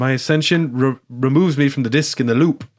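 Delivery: lines delivered in a put-on British accent. Retelling a movie character's line: imitating a british accent. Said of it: "he goes British again".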